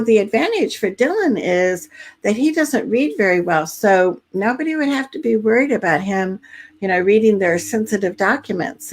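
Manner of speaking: ordinary talk, nothing marked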